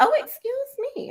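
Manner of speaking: high, mock-offended outburst.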